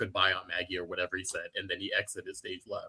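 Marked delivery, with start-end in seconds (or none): 0.0-0.8 mock dismissive brush-off tone, quieter. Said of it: "his tone was like, "Bitch, get outta here,"".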